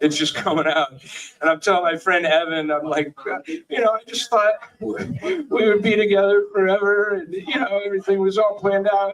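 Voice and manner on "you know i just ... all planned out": tearful, high-pitched sobbing outpouring. Retelling what was said to a friend while sobbing: imitating own past sobbing.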